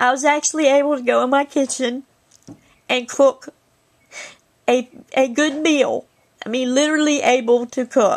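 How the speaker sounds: tearful words with the voice breaking. Speaking to viewers, addressed as guys, crying while speaking. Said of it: "Sorry, I'm crying, guys".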